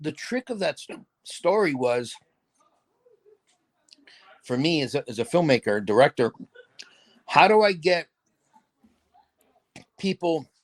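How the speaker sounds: talking with hiccups interrupting the words. A filmmaker explains their approach to a story, talking with hiccups. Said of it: "I'm having hiccups".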